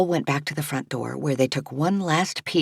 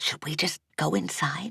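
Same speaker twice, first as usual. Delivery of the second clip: hushed, soft, careful tone; 6 dB quieter than usual. Narrating Mabel asking Archer at an unanswered door, in a hushed tone. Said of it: "asked in a hushed tone".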